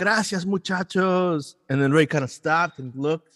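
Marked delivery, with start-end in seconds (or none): 0.0-1.6 mock raised, pitched-up shout. Retelling calling out to a group as they walked away: retelling own yell. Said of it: "I turned around and I yelled".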